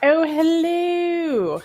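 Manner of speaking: put-on British accent, very high and drawn out. Greeting viewers as the live stream starts: put-on British accent.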